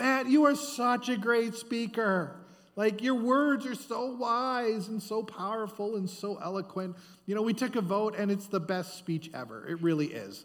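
put-on high, gushing, over-the-top flattering tone. Acting out the crowd praising Herod's speech, imitating gushing flattery. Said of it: "they were laying it on really thick".

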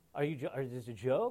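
put-on laughter while talking. Retelling a friend's reaction to the question: imitating laughing while talking. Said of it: "he's laughing like".

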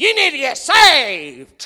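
sour, slow, preachy and judgmental tone. Mimicking people who walk up to a sinner in the city, mimicking an attitude. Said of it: "with an attitude like this".

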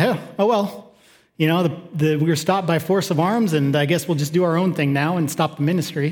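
usual speaking voice

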